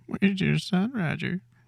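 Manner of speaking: very high-pitched, insane-sounding, sadistic monster voice. Demonstrating how a high voice makes a monster sound scarier, high-pitched monster voice. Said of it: "when you do it in this high voice".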